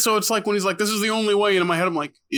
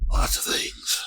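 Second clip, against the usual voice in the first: very romantic, oddly creepy tone. Retelling a movie scene where the lead flirts: romantic Clint Eastwood voice. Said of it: "in the most romantic Clint Eastwood way possible".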